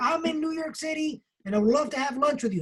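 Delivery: put-on thick, strong Texas accent, pitched high. Retelling what a stranger said to the speaker, in a strong Texas accent. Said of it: "with a strong Texas accent".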